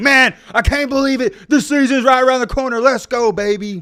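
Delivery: very high, very loud over-the-top sports hype. Showing how to add excitement so viewers care about college football: exaggerated excitement. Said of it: "Now that right there is a little too much, but you get what I'm saying. Sometimes you got to add a little excitement".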